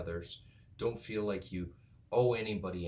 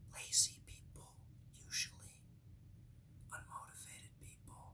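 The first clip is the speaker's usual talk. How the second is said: hushed, breathy whispered aside. Mid-rant to the audience, whispering. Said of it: "I'm whispering".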